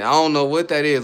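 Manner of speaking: ordinary talk, nothing marked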